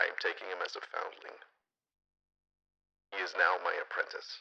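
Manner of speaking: whispered voice with plenty of breath. Doing the voice because the actor wasn't able to, speak in a Mandalorian voice. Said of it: "I was doing the voice".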